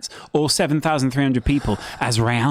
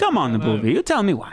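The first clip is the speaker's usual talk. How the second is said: put-on angry Italian accent, heavily laid on, heated; 4 semitones higher than usual. Joking that the other speaker sounds Italian: mock angry Italian accent. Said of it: "It's a bit Sopranos-esque".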